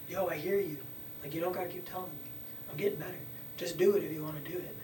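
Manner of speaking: plain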